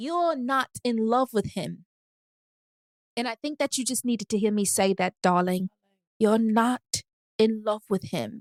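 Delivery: London accent, put on for show. Giving relationship advice in a put-on London accent. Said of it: "my London accent low-key good".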